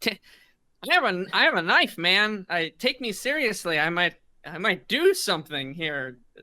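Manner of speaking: exasperated, frustrated delivery. Voicing a man who tosses the offered rags to the ground; frustrated. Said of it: "He's a little frustrated".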